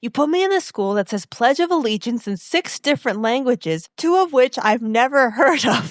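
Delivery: play-acted upset, high-pitched, angry complaining rant. Speaker recapping a scene where a teen starts yelling at another character, retelling an angry yell. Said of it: "starts yelling at Luke".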